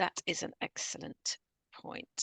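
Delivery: slow, soft whisper.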